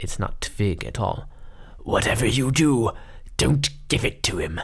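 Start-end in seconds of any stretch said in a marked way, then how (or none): 1.8-4.6 harsh, ragged voice, pushed out. Narrating a phone call where the caller turns out to be Alistair: harsh, ragged Alistair voice. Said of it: "It's Alistair. ... The voice on the other end is harsh and ragged".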